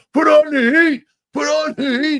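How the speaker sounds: very high-pitched, long, stretched-out wailing scream. Retelling a friend's story of people in the basement: imitating people screaming. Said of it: "They're screaming".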